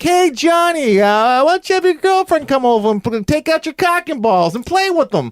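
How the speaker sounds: put-on very high-pitched old grandma voice.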